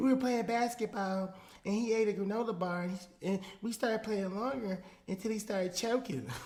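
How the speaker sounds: put-on high, little-kid voice of a young boy. Reading a boy's interview quote aloud, imitating a boy named Jason. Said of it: "this is my Jason impersonation".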